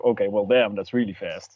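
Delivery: plain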